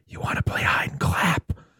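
soft, breathy, hushed whisper. Retelling a film scene, the voice the woman hears, in a whispery voice. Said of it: "in like a whispery voice like".

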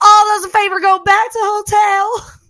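bad very high, loud put-on Southern accent. Recalling a friend's line from a school musical: imitating a bad Southern accent. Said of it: "Her country accent".

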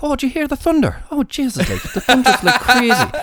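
terrible put-on Irish accent. Retelling what the lady down the road said, in a bad Irish accent. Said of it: "they'll think that's a terrible accent".

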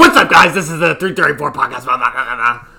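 rattled-off, fast, very loud hype delivery. Showing how to open a podcast episode: imitating Carabas's fast, loud intro. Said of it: "talk, like, really fast and really loud".

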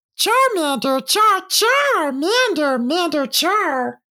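very high-pitched little monster calls. Voicing a fire lizard looking over at the group: Charmander voice. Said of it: "looks over at the group of them and goes".

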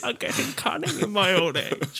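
put-on whispered, hushed, breathy old woman voice. Mimicking how another speaker voiced an old woman, in James's old lady voice. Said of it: "James's old lady voice".

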